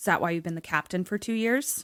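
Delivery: mock muttering under breath. Retelling a movie scene where a character mutters a comeback: imitating someone muttering under breath. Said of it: "says under his breath".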